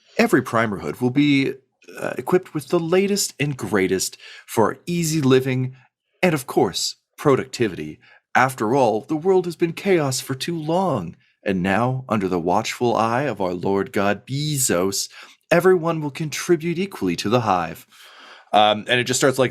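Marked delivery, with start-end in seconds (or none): 0.2-17.9 syrupy, overly pleasant corporate-video announcer voice. Voicing a broadcast on the local channel: overly pleasant announcer voice. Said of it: "a overly pleasant, um, voice".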